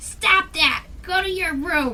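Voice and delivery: play-acted furious, scolding yell. Speaker retells their mom yelling at them, imitating mom yelling. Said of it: "my mom yells at me".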